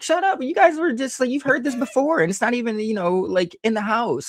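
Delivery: exasperated, high scolding tone.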